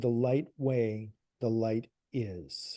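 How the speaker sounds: hushed, very low, slow, drawn-out half-whisper. Retelling what a guide says on a recording: imitating a very low half-whisper. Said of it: "very low whisper of a voice".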